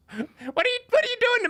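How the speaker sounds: very high, anguished, distressed wizard voice. Voicing a wizard turned into a turtle: distressed wizard voice. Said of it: "this wizard's like".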